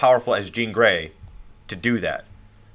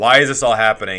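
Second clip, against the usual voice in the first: put-on tearful voice. Retelling a comic scene after burning Wolverine: mock crying as Cyclops. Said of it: "and he's crying".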